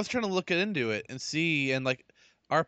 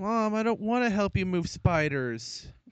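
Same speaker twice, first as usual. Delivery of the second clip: drowsy, high, half-awake sleepy talk; 6 semitones higher than usual. Retelling what a half-awake person said to mom, imitating a sleepy voice. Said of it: "just sleepily said".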